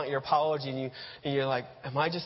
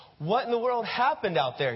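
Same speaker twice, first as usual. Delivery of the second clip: acted, high-pitched scolding telling-off; 7 semitones higher than usual. Acting out a father after a lost game: scolding. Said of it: "he scolds".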